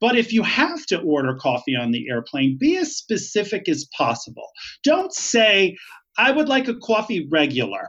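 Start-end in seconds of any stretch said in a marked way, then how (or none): 6.2-7.9 swooping New York accent. Ordering coffee on an airplane, in a new york accent. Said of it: "That's my New York accent".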